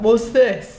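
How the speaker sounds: baffled, put-on punk fan voice. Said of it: "it's an excellent impression of the average Rise Against fan".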